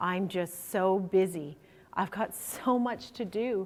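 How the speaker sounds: put-on tired, overwhelmed tone. Retelling a colleague's answer on the elevator: imitating a tired, overwhelmed tone. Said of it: "His tone was exacerbated, tired, and even overwhelmed".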